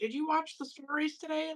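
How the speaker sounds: grandma voice, very high pitched. Recalling how their grandma used to talk to them: imitating grandma's voice. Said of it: "I'm hearing my grandma's voice".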